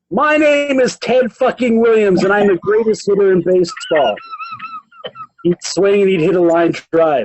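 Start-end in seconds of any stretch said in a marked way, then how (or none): 0.1-4.1 self-hyping boastful bravado, rapid-fire, pitched high. Reading aloud from a book about a ballplayer psyching himself up: imitating Ted Williams screaming. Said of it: "start screaming at the top of his voice".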